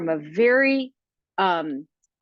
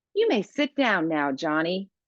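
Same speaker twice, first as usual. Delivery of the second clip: courteous, polite, respectful tone; 2 semitones lower than usual. Showing a corrected request to a child: with more respect. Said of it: "try that again with more respect".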